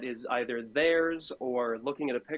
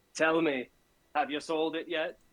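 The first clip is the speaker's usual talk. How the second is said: smug merchant voice, higher; 4 semitones higher than usual. Voicing a shopkeeper in a pawn shop questioning a customer: smug shopkeeper voice. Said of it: "the shit-eating grin on this smug shopkeeper".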